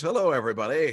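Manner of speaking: put-on radio dj announcer voice. The host welcomes everybody to a comedy panel show, in a radio DJ voice. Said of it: "doing this radio D J voice".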